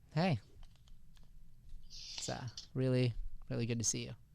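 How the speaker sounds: awkward, uneasy, breathy half-whisper with tension. Demonstrating a greeting with emotional subtext behind it, awkward greeting with subtext. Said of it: "bring in emotion, like subtext ... there's an awkwardness. That's what it is".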